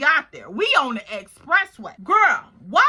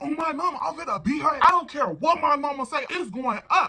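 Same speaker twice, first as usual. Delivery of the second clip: mock, heated, furious rant, really going off. Retelling what a woman said after getting off the phone, retelling an angry rant. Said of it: "she going off, y'all".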